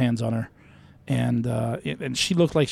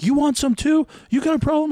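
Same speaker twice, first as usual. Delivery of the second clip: very high, loud, furious angry yelling; 5 dB louder than usual. Retelling a maskless man at the store door turning on the speaker, imitating a man yelling. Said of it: "he just starts yelling at me".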